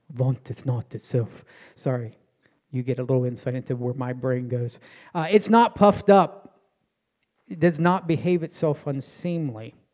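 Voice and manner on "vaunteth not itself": low, soft, hushed vampire voice. Reading a Bible verse aloud, in a Dracula voice. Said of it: "I always read that in the voice of Dracula".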